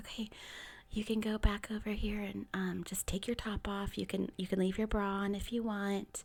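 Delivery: hushed, very quiet whisper. Retelling what she said while walking the speaker over, retelling a half-whisper. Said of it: "she kind of whispers".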